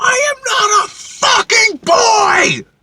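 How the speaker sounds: shrill, very high, drawn-out furious scream, word by word. Retelling an argument at work, imitating a furious scream. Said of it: "I turned around and I screamed at him".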